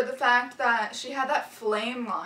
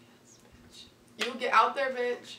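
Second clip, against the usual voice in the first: usual speaking voice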